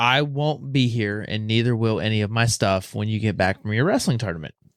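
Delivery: ordinary delivery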